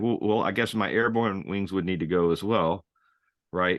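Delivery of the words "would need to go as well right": ordinary talk, nothing marked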